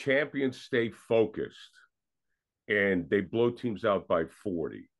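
ordinary talk

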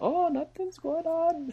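fake Irish accent pitched very high. Discussing a movie, voicing the characters' reply; put-on Irish accent. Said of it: "I don't want you to do an Irish accent anymore".

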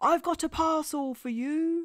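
booming, very loud bellowing giant voice. Narrator reads the giant postman at Billy's door, bellowing. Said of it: "he bellowed".

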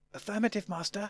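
hushed half-whisper. Reading a story, a companion answers its master's half-whispered instruction: half-whispering back. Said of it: "K-9 whispered back".

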